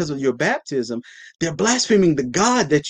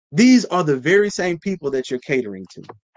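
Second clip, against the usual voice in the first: plain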